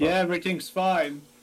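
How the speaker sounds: put-on intimidating voice. Answering a guard's call as the boss, imitating the boss's intimidating voice. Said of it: "try to put on an intimidating voice".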